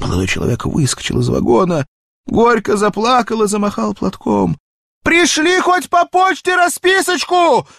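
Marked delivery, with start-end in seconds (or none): 5.0-7.6 very high, shrill, carrying shout. Narrator reads the young man calling after the departing train, shouting. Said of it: "крикнул он".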